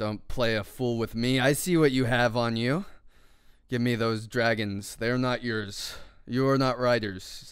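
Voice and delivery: deep, low growling voice. Voicing a skeleton-like figure who demands the dragons, in a deep growling voice. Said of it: "with a very deep growling voice".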